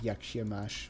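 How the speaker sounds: attempted Polish accent. Speaker says a Polish greeting again, in an attempted Polish accent. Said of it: "saying it in a perfect Polish accent".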